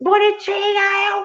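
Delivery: furious high-pitched shout. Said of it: "Comecei a gritar".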